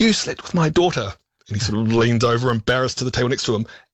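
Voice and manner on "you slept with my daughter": play-acted voice, rising, raised and pitched up. Describing a restaurant scene from a show, quoting a character: retelling a raised voice. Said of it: "Alice starts raising her voice and says".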